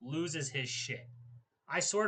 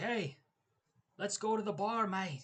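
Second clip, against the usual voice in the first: badly faked Irish accent, pitched up; 5 semitones higher than usual. Imagining this guy as a work boss inviting you out, in a bad Conor accent. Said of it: "I can't do a very good Conor accent".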